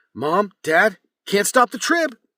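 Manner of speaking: very high, loud, belted character shout. Demonstrating the phrase used to get into character, in Trib's character voice. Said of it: "to get into Trib's voice, I go".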